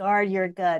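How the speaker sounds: ordinary delivery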